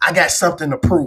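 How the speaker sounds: ordinary delivery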